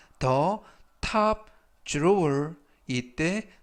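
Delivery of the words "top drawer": top drawer drawn out very slowly and carefully. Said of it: "the top drawer 하면".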